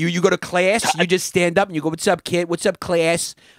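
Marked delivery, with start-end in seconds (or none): 1.9-3.3 put-on strong Long Island accent. Imitating the teacher greeting his class at the start of lessons, Chris's strong Long Island accent. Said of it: "has a very strong Long Island accent".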